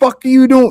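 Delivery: high-pitched, harsh scolding full of swearing. Imagining Kobe calling out a flopping player: imitating Kobe cursing someone out.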